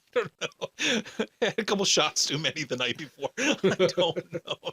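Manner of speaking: high, slow, giggling laugh through the words.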